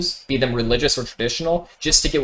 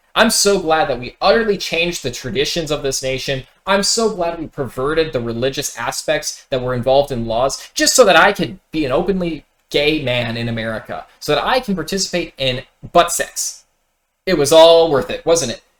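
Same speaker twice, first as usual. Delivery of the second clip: normal talking voice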